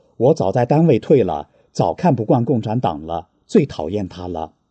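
plain

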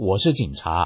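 plain

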